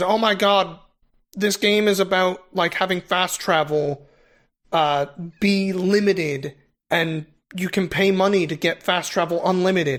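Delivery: ordinary talk, nothing marked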